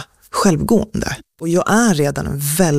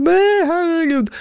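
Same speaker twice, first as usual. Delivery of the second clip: very high, screamed cry; 14 semitones higher than usual. Recounting the moment everything stopped, retelling her mother's scream. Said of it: "Min mamma typ skrek".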